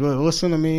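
plain

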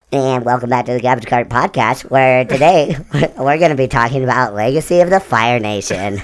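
very loud, put-on valley girl drawl. Doing the podcast intro after a co-host's helium joke, in a valley girl voice. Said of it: "Why'd you do that as a valley girl".

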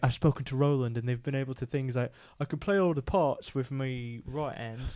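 put-on soft, poorly done Sheffield accent. Retelling a man's plan to carry on after a car accident, bad Sheffield accent. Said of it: "A bad Sheffield accent".

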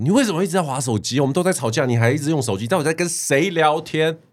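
very high, loud demanding yell. Retelling an argument with someone always on their phone, retelling a loud shout. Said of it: "我就是很大声的说".

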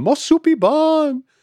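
put-on very high, tiny three-year-old voice. Speaker retells how their mom imitates them at three: imitating three-year-old self. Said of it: "does an impression of me holding up like a bowl".

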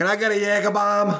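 high-pitched, put-on New England accent. Imagining the listener staggering up to a bar to order, new england accent. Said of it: "with that wonderful New Englander accent".

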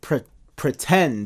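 emphatic "pretend," drawn out slow. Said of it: "that's the key word".

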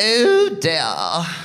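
put-on prim, posh, queen-like upper-crust British accent. Speaker recalls a childhood belief about how British people talk, Queen-like British accent. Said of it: "all British people spoke like the Queen".

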